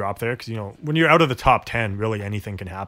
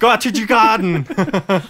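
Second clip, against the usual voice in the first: put-on Austrian accent, much higher and louder; 11 semitones higher, 6 dB louder than usual. Two hosts try saying a name in different accents; use a Schwarzenegger accent. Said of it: "now it just sounds Austrian".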